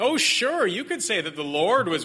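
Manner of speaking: high, sing-song, sarcastic, mocking, taunting sneer. Speaker explains a Bible passage, voicing the ruler mocking the Israelites; acting out mocking sarcasm. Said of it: "Pharaoh's mocking the Israelites".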